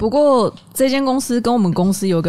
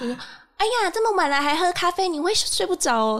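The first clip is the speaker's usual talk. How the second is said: put-on cutesy baby voice, much higher pitch; 10 semitones higher, 5 dB quieter than usual. Recalling a man who got drunk during work hours and spoke to everyone: cutesy baby voice. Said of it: "然后用娃娃音跟我们每个人说话".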